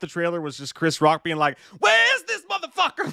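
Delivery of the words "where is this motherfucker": very high, rough, excited outburst. Describing a movie trailer, imitating its actor: Chris Rock voice. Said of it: "Just doing Chris Rock voice".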